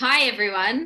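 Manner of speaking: overcorrected, far too loud. Podcast guest, told by the host to talk louder, greets everyone too loud. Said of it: "not that loud".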